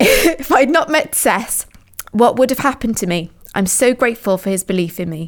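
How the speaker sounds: voice catching and choking up, close to tears. Remembering Seth, who saved their failing education, choking up. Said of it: "I'm gonna cry".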